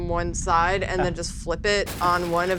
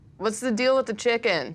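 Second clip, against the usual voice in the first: mild, called-out voice; 4 semitones higher than usual. Character yells a question into the body of a monster: yelling into the monster. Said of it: "I just kind of yell into this uh".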